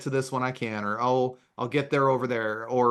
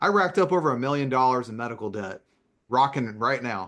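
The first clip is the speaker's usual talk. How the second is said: normal talking voice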